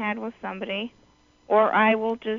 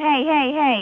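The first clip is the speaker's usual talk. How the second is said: put-on yelling, "hey" repeated three times; 4 semitones higher, 4 dB louder than usual. Retelling a little kid at the arcade taking their tickets: retelling own yelling. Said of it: "I started yelling".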